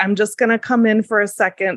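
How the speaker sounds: ordinary delivery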